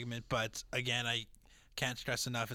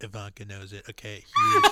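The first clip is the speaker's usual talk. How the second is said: very loud, big, swooping put-on voice; 3 semitones lower, 12 dB louder than usual. Asked to do the voice and say huge: Donald Trump voice. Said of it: "do the Donald Trump voice. Say huge".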